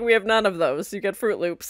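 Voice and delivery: ordinary talk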